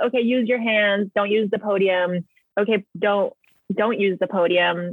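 ordinary talk, nothing marked

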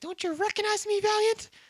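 squeaky, very high cartoon voice pitched way up. Retelling a scene, the character's voice becoming high: high-pitched Lloyd voice. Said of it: "His voice becomes high".

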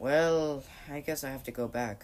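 ordinary talk

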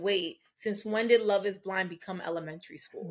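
plain

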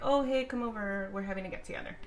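ordinary talk, nothing marked

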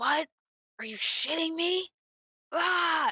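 yelling high up in the voice. Retelling a phone call about a dead battery, imitating his yelling. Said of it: "And he's yelling at me".

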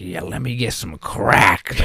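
silly cartoon squirrel character voice. Remembering doing voices with friends, as a squirrel from a TV show: TV-show squirrel voice. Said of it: "That would be his voice".

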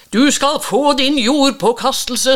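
very high, loud shrieked scream. A priest in a boat screaming back at Jens. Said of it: "skrek presten tilbake".

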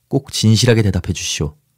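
ordinary delivery

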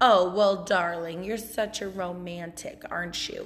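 mock-sarcastic delivery. Retelling what she said back to a man after apologizing to him, mock-sarcastic. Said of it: "And very sarcastically".

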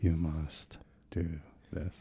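low, very quiet, slow murmur. Describing calming jiu-jitsu videos before sleep: Danaher voice. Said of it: "Danaher kind of voice".

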